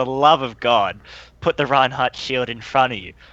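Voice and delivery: mock urgent screaming, barked out. Retelling a shout at another player during a match, imitating own screaming. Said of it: "and I'm screaming, like, absolutely screaming to Sparky".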